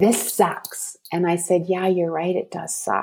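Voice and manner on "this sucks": acted-out yell, higher pitch. Recounting a child losing it when a parent got home, retelling a yell. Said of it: "he just yells".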